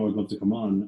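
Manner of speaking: ordinary talk, nothing marked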